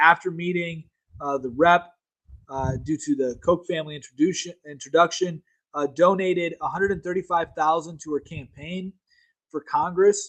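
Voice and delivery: ordinary talk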